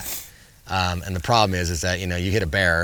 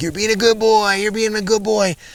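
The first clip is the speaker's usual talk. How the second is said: very high, loud, gushing, doting praise; 8 dB louder than usual. Retelling praising a bear: imitating own praising tone. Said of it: "my intonation changed".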